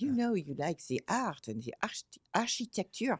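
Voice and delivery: put-on French accent. Retelling what a real estate head told the speaker: Micheline's French accent. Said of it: "in her lovely French accent".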